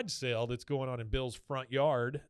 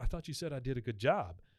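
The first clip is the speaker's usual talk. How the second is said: plain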